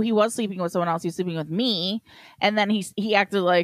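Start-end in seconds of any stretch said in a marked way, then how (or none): none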